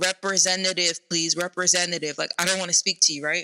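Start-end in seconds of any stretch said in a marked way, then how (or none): none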